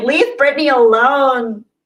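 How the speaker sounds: high voice with the word "alone" drawn out long. Reading a chat message aloud in an impression: John Crocker voice. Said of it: "John Crocker voice".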